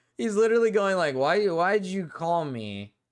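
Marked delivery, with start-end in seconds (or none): 1.2-2.9 put-on silly, drunk-sounding voice. Imitating how a drunk caller sounded: imitating a drunk caller's silly voice. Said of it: "his voice sounds, like, silly".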